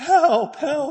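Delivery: very high, shrill, loud cries. Retelling the Star Wars trash compactor scene, Luke cries out: high-pitched Luke voice. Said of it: "in that really high-pitched voice that he has".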